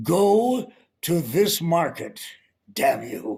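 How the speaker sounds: commercial announcer voice. Explaining how everyone else sounded for a supermarket job: announcer voice. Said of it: "They all had that announcer thing".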